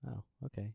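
sad, dejected. Reacting to a teasing reply to an offer of fun facts: sounding sad. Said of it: "Why'd you get sad when I said that?".

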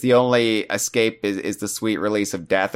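plain

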